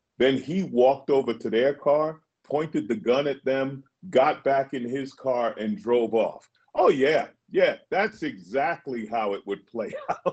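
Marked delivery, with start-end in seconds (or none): 6.7-10.3 cracking up laughing mid-sentence. Mocking an implausible story about a gun incident, laughing while talking. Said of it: "I'm sorry for laughing".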